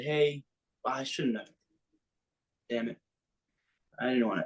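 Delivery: put-on whisper. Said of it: "kinda whispered in my ear and said".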